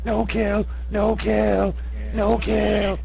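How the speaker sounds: limp kobold voice, very high, very slow, creaky. Voicing a captured kobold hanging limply over a shoulder: limp captured kobold voice. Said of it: "he sort of hangs there limply and says".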